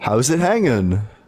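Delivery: sarcastic, mocking delivery. Asked to talk openly to God, greeting him: sarcastic. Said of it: "that is the most sarcastic way".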